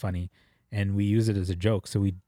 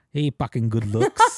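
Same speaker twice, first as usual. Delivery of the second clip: put-on Filipino accent, louder; 3 semitones higher, 6 dB louder than usual. Retelling a pervy uncle's pickup line to girls: imitating a filipino uncle's accent. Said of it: "the perfect accent".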